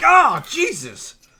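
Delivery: mock very high, very loud terrified shriek. Retelling being jump scared at a door: retelling a terrified scream. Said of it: "we were terrified".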